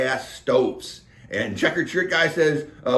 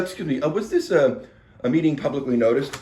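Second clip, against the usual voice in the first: normal talking voice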